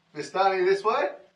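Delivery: very loud, high yell. Playing a character who calls out to distant guards: yelling to guards in character. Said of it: "I yell out to the guards".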